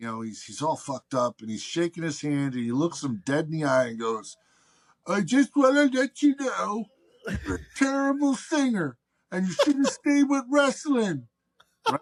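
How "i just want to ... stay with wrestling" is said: put-on very high, slurred speech. Retelling what a friend said after a show: imitating slurred speech. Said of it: "his speech is slurred".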